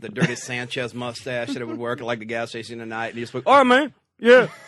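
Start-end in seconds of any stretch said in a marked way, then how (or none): 3.5-4.5 high, loud, dopey, dim-witted mocking voice. Imitating a night gas station worker: imitating a dumb gas station guy. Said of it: "the dumb guy with, like, the mullet".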